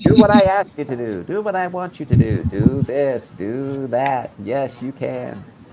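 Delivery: high, cartoon super-chicken talking voice. Recalling how a chicken character used to talk: super-chicken voice. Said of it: "He would talk like this".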